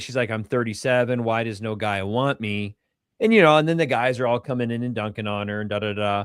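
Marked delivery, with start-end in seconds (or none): 0.3-2.7 play-acted slow, weepy, tearful sobbing. Retelling a video of a woman crying online: imitating someone crying. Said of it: "this girl's, like, crying. She's like".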